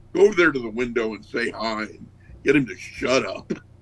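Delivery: plain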